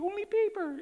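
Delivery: put-on tiny toddler voice, pitched very high. Retelling how a little boy repeated a family rule: imitating a little boy's voice. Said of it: "say it back in his little voice".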